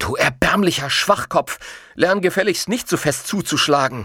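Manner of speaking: harsh, sharp, high-pitched snapping. A young man, after elbowing a giant, scolds him: snapping at him. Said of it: "fuhr er ihn an".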